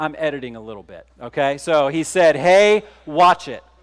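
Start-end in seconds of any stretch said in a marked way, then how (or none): 2.3-3.6 harsh, loud, barked shout. Retelling what he said to a pickup truck driver, retelling a harsh, loud shout. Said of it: "Said it with a very harsh tone, very loudly".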